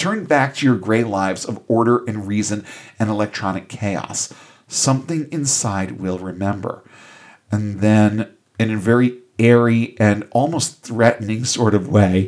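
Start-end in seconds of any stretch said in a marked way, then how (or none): none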